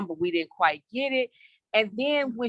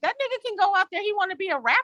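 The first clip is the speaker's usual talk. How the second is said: mad, exasperated, shrill, furious outburst; 10 semitones higher than usual. Retelling own reaction to a character while reading: retelling own angry outburst. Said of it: "I was so mad".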